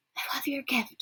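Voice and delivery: hushed, soft, barely voiced whisper. Narrating a goodnight hug, reading a character's whispered line: whispering. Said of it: "she whispers".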